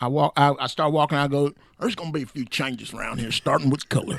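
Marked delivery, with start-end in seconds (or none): 1.8-4.2 country sergeant major parade-ground announcing voice. Retelling addressing the squadron in the sergeant major's place: imitating a country sergeant major. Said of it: "impression of my sergeant major".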